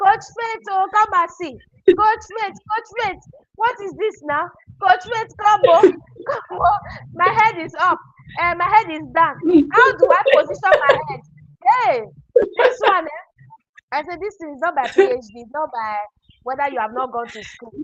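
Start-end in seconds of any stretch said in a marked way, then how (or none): 0.0-13.2 screamed out, high and loud. Telling about a student's first video with her camera upside down, retelling her screaming. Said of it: "she was screaming".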